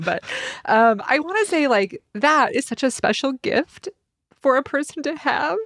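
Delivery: high, tearful, bawling voice, talking through tears. Speaker talks to a co-host, crying while speaking. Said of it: "I am bawling right now".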